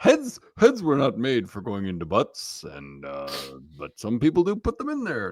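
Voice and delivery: dropped low, with the pitch swinging. Answering a radio caller's question: Doctor Drew impression. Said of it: "That was my Doctor Drew impression".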